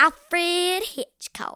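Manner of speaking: fake Southern drawl on a name. Naming the director of the film being discussed: put-on Southern accent. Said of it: "the accent is back".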